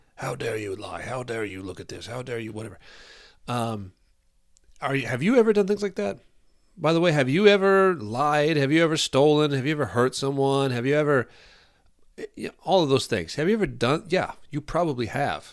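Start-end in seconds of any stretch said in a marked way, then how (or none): 0.2-2.8 play-acted disappointed, soft, angry scolding tone. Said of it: "for you to talk like that".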